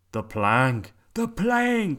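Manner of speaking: loud shouted pirate cry, repeated. Two pirates react to the troll's answer, yelled. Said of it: "Yelled Ben Buckle and Percy Patch".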